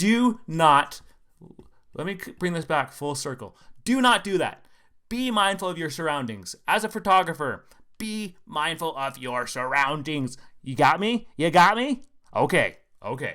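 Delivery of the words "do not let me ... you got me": triggered, heated, worked-up, agitated speaking. Warning photographers to mind their surroundings after watching a clip: worked up, triggered. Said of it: "I got a little triggered there".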